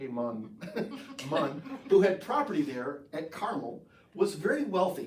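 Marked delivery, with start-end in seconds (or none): 0.0-1.6 playful put-on Jamaican accent. Reading from 1 Samuel 25, the speaker voices a name in a Jamaican accent. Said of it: "if you think of it like a Jamaican accent".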